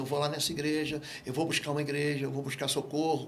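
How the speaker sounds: ordinary talk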